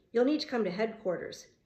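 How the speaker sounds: usual speaking voice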